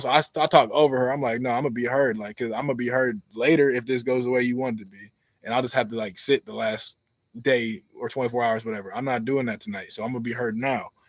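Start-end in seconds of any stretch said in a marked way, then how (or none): none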